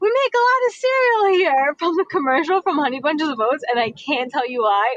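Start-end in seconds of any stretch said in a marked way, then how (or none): 0.0-1.7 put-on yelling voice. Retelling a voice message about a friend's outburst: imitating someone yelling. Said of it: "Adam randomly yells out".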